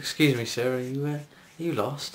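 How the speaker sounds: very quiet, hushed, soft voice. Retelling a man who came up behind him asking, in a very quiet voice. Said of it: "in a very quiet voice".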